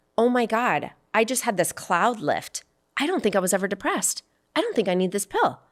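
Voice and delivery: ordinary talk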